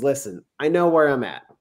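plain

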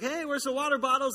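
mock casual shout. Retelling calling from the kitchen to his wife: imitating own past shout. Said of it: "I kinda shout out".

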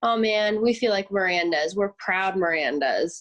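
ordinary talk

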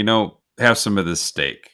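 ordinary talk, nothing marked

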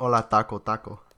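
loud, put-on Mexican accent played for laughs. Jokingly claiming to be Mexican: put-on Mexican accent. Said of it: "Perfect impression".

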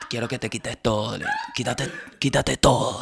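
whispered, breathy, deep radio-announcer voice, romantic. Speaker imagines a romantic night with Erika and acts out the line; deep romantic announcer voice. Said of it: "la voz grave así como de locutor".

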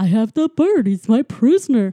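very loud, very funny garbled broken-translator voice. Retelling a scene where a character answers a call on his collar, funny broken translator voice. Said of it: "He's got a very funny voice".

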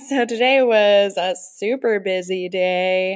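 ironic, tongue-in-cheek, sarcastic delivery. Answering a question about what they did today: sarcastic. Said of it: "Sounds very sarcastic".

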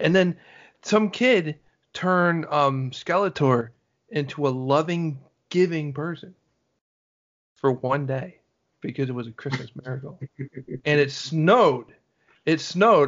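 heavy, sustained sarcasm all the way through. Recounting a He-Man and She-Ra Christmas story, sarcastic. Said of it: "I'm being sarcastic with this".

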